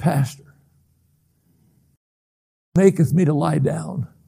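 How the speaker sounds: feeble, weak, quavering, trembling voice. Retelling a man's words to his pastor from bed, imitating a trembling, weak voice. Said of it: "in a trembling, weak voice".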